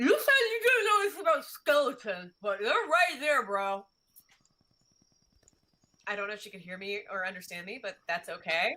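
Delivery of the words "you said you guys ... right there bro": mouth-full talk, pitched up. A character walks straight to Amelie and speaks to her, talking with mouth full. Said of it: "mouth full of biscuits".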